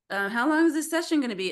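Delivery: put-on uninterested narrator. Acting out the voiceover guy they hired: imitating a barely interested voiceover guy. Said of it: "the voiceover guy they hired was like".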